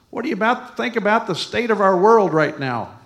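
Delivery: loud, high-pitched voice. Speaker retells what a lady said to him: retelling a loud question.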